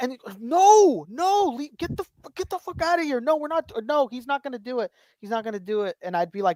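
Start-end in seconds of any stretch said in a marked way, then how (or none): 0.4-6.0 higher-pitched, pissed-off, angry dad yelling. Recalling childhood, the speaker acts out what their dad said: mimicking an angry dad. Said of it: "would be so fucking pissed".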